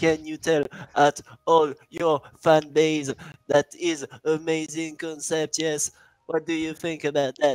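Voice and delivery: high, slow, cheesy mock TV reporter voice.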